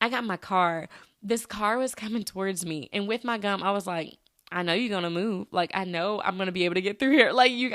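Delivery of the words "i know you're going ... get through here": put-on, sassy-sounding voice. Retelling a car coming toward her while chewing gum: imitating her own sassy thoughts. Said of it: "Why am I being so sassy in my head?".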